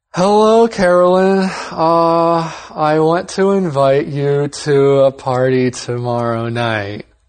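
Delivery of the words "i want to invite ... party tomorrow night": very slow, flat, unenthusiastic, unexcited monotone. Role-play on television, inviting someone to a party: flat and unexcited. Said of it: "It's true, I didn't sound very excited".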